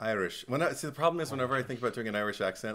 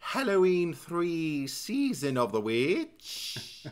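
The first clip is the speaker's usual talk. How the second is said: fake Irish brogue, pitched up; 6 semitones higher than usual. After joking that he can offend the Irish, the speaker tries a put-on Irish accent. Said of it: "I can offend the Irish".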